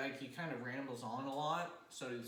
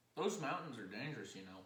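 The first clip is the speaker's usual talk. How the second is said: put-on drawling Texan accent. Voicing a character warning about the mountains: Texan accent. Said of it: "now he's Texan".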